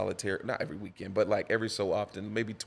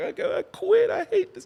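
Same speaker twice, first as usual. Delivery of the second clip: put-on very high, loud, angry, tearful crying outburst; 9 dB louder than usual. Retelling quitting after not being thanked, imitating own past angry crying. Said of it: "I'm mad. I'm crying".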